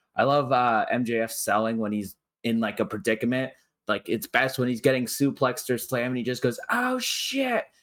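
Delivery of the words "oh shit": put-on very high, shrill, top-of-the-lungs yell. Speaker describing a wrestler getting slammed in a match, retelling MJF's full-lung yell. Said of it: "he yells it at the top of his lungs".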